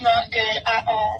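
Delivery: upset, distressed, down and troubled voice. In a skit, answering a phone call, asked how it's going, sounding upset. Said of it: "You sound upset".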